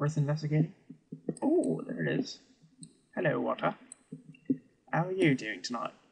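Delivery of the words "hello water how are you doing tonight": bad, poor put-on British accent. Greeting the water he found while exploring, poor british accent. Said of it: "why are you talking in a British accent".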